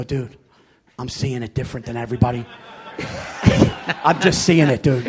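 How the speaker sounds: low, hushed, almost-whispered voice. Retelling what he said when he phoned the co-host: low, almost a whisper. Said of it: "He goes down. It's almost a whisper".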